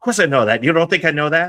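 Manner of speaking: play-acted, very loud, high, defensive retort. Retelling how a guy answered in an interview, imitating a defensive man. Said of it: "he's very defensive".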